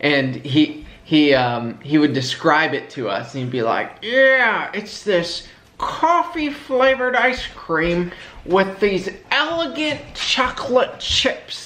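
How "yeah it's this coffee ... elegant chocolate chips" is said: thick put-on New England accent, much higher. Recalling how a man used to describe an ice cream, in his thick new england accent. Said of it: "He had this thick accent".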